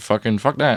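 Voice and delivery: ordinary talk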